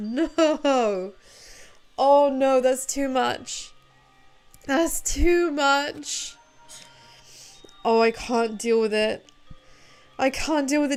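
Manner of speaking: talking while crying through tears. Reacting to a series of sad scenes, speaker talks through them while crying. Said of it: "I am actually sat here in tears".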